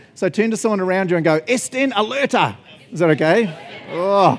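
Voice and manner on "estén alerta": forceful, fierce, aggressive, high-pitched voice. Showing the listeners how to say the spanish line: said aggressively. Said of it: "you have to say it aggressively".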